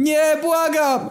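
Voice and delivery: very high, loud, terrified, pleading cry. As a girl swings to hit him, the narrator cries out: shouted. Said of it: "krzyknąłem".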